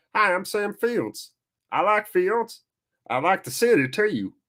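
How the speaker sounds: odd, high, put-on Southern American twang. Commentating a football game, the speaker gives a player a Sam Fields voice. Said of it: "that's your voice".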